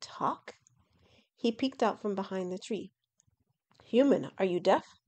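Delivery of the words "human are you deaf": snorting, louder. A dragon speaks to a human peeking from behind a tree, snorting. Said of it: "the dragon snorted".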